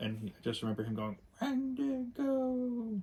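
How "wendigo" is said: very high arcade villain character voice. Recalling an old arcade game's voice line, in a put-on game character voice. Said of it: "I apologize for my impersonations".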